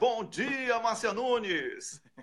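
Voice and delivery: high, slow, drawn-out announcer-style delivery.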